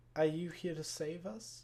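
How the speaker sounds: small ghostly echoing voice. Voicing a ghost addressing the party, use a small echoing voice. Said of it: "you hear a small voice kind of echo out".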